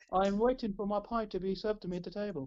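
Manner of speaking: ordinary delivery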